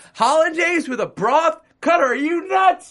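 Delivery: very high, loud yell carrying across a room. Retelling how a man shouted at someone from across the room, retelling a yell. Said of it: "He yells".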